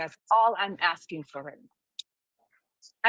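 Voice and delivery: slow, emotional, heartfelt delivery. Asking another speaker to let the previous person finish, emotional. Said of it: "I know that I sound emotional".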